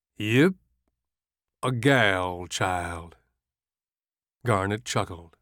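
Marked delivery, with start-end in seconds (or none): 0.2-3.2 very slow, lazy drawl, gal stretched out. Narrator reading a story, a voice answers after a pause, slow drawl. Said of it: "a voice says in a slow drawl".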